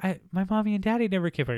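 high, scared, little put-on creature voice. Retelling the Pegasus's line, imitating a scared Pegasus. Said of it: "she's just so scared and frightened".

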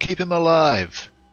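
loud, high-pitched yell. Voicing Jace during a fight, calling to keep someone alive: yelling in character. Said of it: "Jace yells out".

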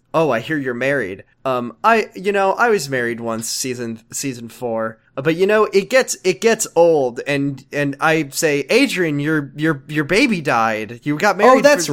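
plain

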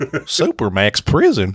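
swooping, silly, goofy cartoon dog voice. Asked by another speaker to say a phrase in Goofy's voice; Goofy voice. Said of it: "You say Supermax prison in Goofy's voice".

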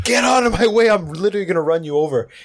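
put-on furious outburst. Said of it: "Just had a full meltdown".

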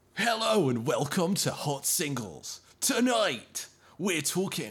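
radio shock jock DJ host style. Trying out a Top Gear style podcast intro: Jeremy Clarkson impression. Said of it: "I just gotta do a Clarkson impression".

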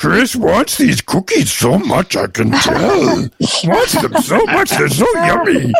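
high pitch, swinging wildly up and down. During bidding, asked to do a bit to push the price up, in a Cookie Monster voice. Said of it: "do your Cookie Monster thing".

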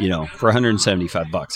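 ordinary talk, nothing marked

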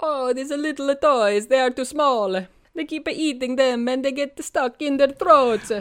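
put-on stage Italian accent.

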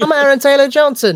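high, loud, squeaky voice. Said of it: "a high-voiced James Bond".

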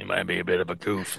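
very low, rough, creaky voice. Doing a movie star line as an impersonation: Vin Diesel impersonation. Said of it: "That's my Vin Diesel impersonation".

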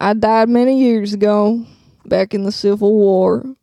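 put-on Southern accent. Playing a ghost in an improvised movie scene: Southern accent. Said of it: "why'd you go Southern suddenly?".

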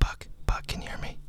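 hushed, whispered voice. A caller staging a performance for the viewers speaks to buck, whispering. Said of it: "why are you talking all weird like that?".

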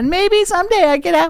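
very high, shrill, loud carrying yell. Retelling a kid yelling at an old man while leaving: imitating Francie yelling. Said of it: "She's just yelling at him the whole way out".

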